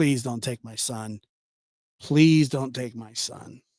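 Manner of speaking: mock crying, tearful. Parent retells begging hours before learning the son was okay, retelling a tearful plea. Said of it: "I was crying".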